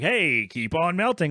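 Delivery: odd, weird radio DJ style delivery. Repeating a catchphrase the way it was read earlier: weird radio guy voice. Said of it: "like a weird radio guy".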